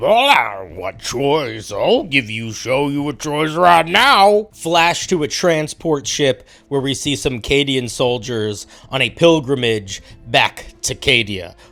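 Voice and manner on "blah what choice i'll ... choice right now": hellish demonic voice. Retelling a voiceover reply from an episode: imitating a demon voice. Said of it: "one sounds like a demon".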